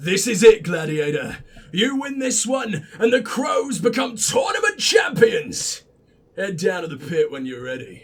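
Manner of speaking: low, rough, gruff, gritty voice. Redoing a game character's line to show the better voice: gruff gritty voice. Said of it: "See? Is that not just so much better".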